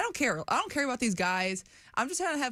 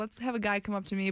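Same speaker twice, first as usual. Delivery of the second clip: ordinary talk, nothing marked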